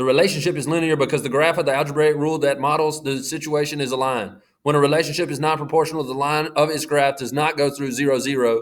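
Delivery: rapid-fire, rattled-off reading aloud. Testing whether a listener reading captions can keep up, talking really fast. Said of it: "I'm gonna try to talk really fast".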